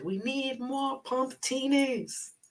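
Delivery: put-on terrible British accent, very high and drawn out. Before watching Vanderpump Rules at a friend's place, quote him in a terrible British accent as James Kennedy. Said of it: "That's my terrible British accent".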